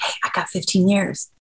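hushed, secretive, confiding whisper. Retelling how people come up later and whisper to them: imitating someone whispering.

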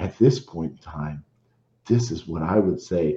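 very quiet, very low golf commentary voice. Retelling a man's advice on stage, in his golf announcer voice. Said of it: "like in his golfer announcer voice".

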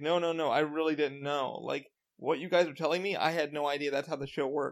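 ordinary talk, nothing marked

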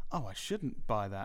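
plain

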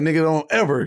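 normal talking voice

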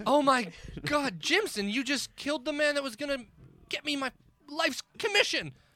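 frantic, high-pitched wailing outburst.

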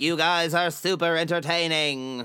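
mocking put-on alien voice. Imagining aliens beaming the hosts up, in a mocking alien voice. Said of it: "that's a racist voice against aliens".

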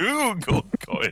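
put-on puppet vampire voice, counting cadence. Counting gold coins slowly: Count from Sesame Street voice. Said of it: "like Count Dracula in, in Sesame Street".

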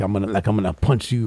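imitated threatening bully voice. Retelling how a bully threatened a younger kid: imitating a threatening bully. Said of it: "threatening the kid, like he's gonna beat him up".

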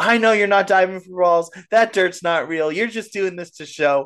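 acted heckling yell. Speaker retells harassing a ballplayer warming up in the circle, retelling a yell. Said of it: "as I started yelling at him".

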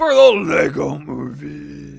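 loud, rough, growly dragon voice with stretched ending. Podcast host ends the Lego Movie intro, dragon voice. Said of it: "That was terrifying".

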